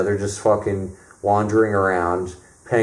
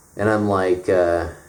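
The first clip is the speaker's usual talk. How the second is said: ordinary delivery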